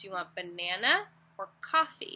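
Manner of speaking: slow, clear, careful, each word spaced. Showing a parent how to offer a child a choice: nice, clear and slow. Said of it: "say it nice and clear and slow".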